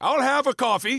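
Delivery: clumsy put-on English accent, very high-pitched. Told to try an English accent after saying he can't, bad English accent. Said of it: "Do it".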